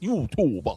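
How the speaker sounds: "YouTuber" said in a New York accent. Asking for top five YouTubers, saying the word with a New York accent. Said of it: "I gotta say it like New York".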